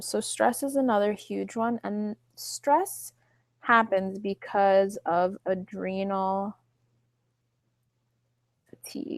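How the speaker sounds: slow delivery. Explaining thyroid causes while also typing, talking slowly. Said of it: "If I'm talking slow".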